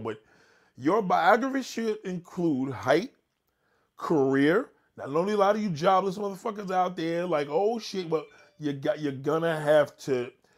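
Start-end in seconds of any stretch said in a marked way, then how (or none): 0.0-4.7 slow, deliberate reading voice. Telling listeners to write this down while reading it out; reading slowly. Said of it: "I'm going to read slow".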